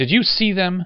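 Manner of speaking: very high, loud, spluttering outburst. After nobody helped the girl, one of the group speaks up, sputtering. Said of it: "Lamar sputtered".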